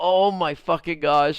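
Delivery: acted laughter, slow words spoken through laughing. Retelling finding a missing brush bristle in a friend's restroom: retelling laughing while talking. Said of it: "And I just start laughing like".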